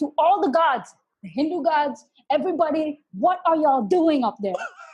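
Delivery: mock exasperated, fed-up plea upward. Retelling lying on the ground after a run, imitating own past shout. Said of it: "shouting at the sky".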